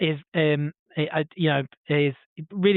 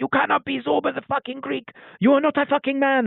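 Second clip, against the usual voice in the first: very high, rough, furious heckling outburst; 11 semitones higher than usual. Retelling how an audience member heckled a performer, imitating an angry heckler. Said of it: "he was like getting really angry at him".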